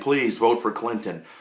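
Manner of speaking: ordinary delivery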